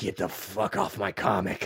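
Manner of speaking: deep, low, slow, drawn-out tough-guy voice. Pitching a bitter, rough character take: Clint Eastwood voice. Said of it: "Just go full Clint Eastwood, uh, a la Gran Torino".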